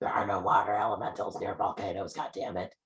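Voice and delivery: furious, hissing creature voice. Voicing a salamander speaking in common, angry after a hiss: angry salamander voice. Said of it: "you do hear it say in common".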